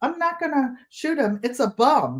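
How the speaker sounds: bomb said as bum. Quoting what he told his auntie, boston accent. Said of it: "It was a Boston accent".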